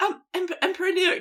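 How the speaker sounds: tiny squeaky voice, pitched way up. Imitating a scribe at an emperor's court in a very squeaky voice. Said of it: "who's got a very squeaky voice. It's like".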